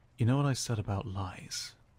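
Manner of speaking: close whisper, leaning in. Questioning a suspect about lies, leaning in to whisper. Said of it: "he leans in to whisper".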